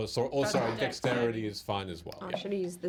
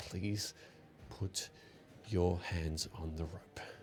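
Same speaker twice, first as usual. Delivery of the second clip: through gritted teeth, lower and quieter; 4 semitones lower, 8 dB quieter than usual. Woman telling the player to grab the rope, through gritted teeth. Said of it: "she just through gritted teeth says".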